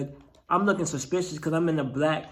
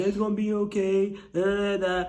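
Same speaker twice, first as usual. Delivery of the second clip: mock laughing while talking, higher pitch; 4 semitones higher than usual. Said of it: "she's sitting there laughing".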